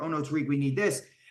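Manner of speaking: normal talking voice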